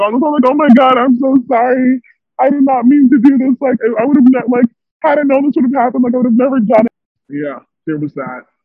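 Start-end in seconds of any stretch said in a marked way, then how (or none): 0.5-6.9 high, desperate, put-on bawling cry. Speaker retells their own apology on the phone outside the club, reenacting bawling. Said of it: "I'm like bawling".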